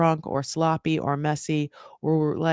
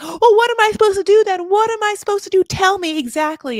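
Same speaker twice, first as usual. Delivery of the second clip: very high, shrill, raised, angry and defensive voice; 8 dB louder than usual. Retelling what she said back to her parents, imitating her raising her voice. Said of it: "she starts kind of raising her voice".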